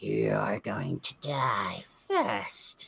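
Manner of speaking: low, swooping demonic fiend voice. The narrator voices him turning to Amara and speaking: fiendish voice. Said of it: "in the same sort of uh, uh, uh, fiendish language".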